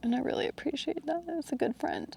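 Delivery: choked-up, very high, hushed, tearful crying. Speaker talks about a good friend who took them up the mountain, crying. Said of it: "I don't know why I'm crying".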